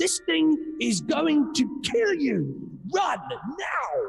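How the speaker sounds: very high, very slow, layered double voice. Voicing a character telling people to get away: double voice. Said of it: "with both voices".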